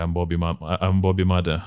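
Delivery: ordinary delivery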